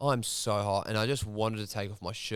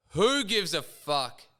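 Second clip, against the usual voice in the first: play-acted scream at top of lungs, high, loud; 8 semitones higher, 5 dB louder than usual. Recounting a moment when energy surged through them: retelling a yell. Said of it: "I just yelled out at the top of my lungs".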